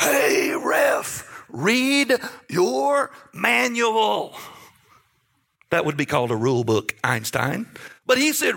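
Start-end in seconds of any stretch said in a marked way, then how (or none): 0.0-4.4 mock very slow, deliberate, drawn-out jeering tone. Retelling what a man screamed at the ref with cupped hands, mock screaming. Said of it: "he's screaming the whole game".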